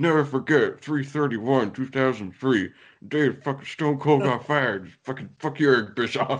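put-on furious announcer rant. Retelling a furious rant: Jim Ross going off. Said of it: "Jim Ross just goes off, like".

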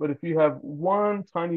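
ordinary delivery

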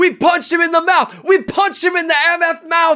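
put-on very high, loud, fiery hollering. Retelling a funny mic'd-up football moment, imitating Frank Clark yelling. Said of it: "is just yelling".

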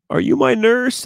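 shrill, piercing, very high, loud yell. Retelling a hospital patient calling out to the nurses: imitating someone yelling. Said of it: "yelling to the nurses".

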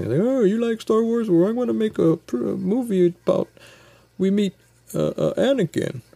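very high, halting, fumbling put-on voice. Retelling a comedian's stand-up bit about Star Wars prequels: George Lucas voice. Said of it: "he did a little George Lucas kinda voice".

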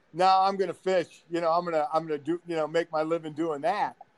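usual speaking voice

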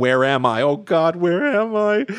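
slow build, climbing steadily in pitch. Retelling a movie scene in a bathroom, imitating Nicolas Cage screaming. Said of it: "And he starts screaming".

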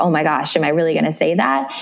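usual speaking voice

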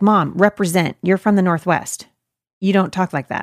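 ordinary talk, nothing marked

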